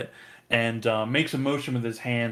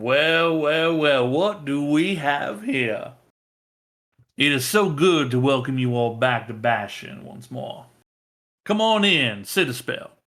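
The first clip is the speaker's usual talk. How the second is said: gracious, welcoming, spokesman-like tone; 3 semitones higher, 3 dB louder than usual. Voicing the council's spokesman, arms wide in greeting: the spokesman's welcoming voice. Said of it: "the voice of the council, um, stand up, arms wide open, uh, in greeting".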